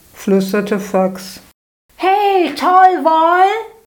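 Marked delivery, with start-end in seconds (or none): 2.0-3.5 very high, shrill, thrilled, delighted squeal. Narrator reading a story aloud, Maxi's line: squealing with delight. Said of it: "quietschte Maxi begeistert".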